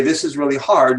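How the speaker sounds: ordinary talk, nothing marked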